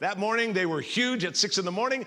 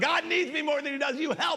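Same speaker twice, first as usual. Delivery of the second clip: mock frightened, high-pitched yell; 9 semitones higher than usual. Speaker retells being caught in the waves, acting out yelling for help. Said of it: "I'm yelling out".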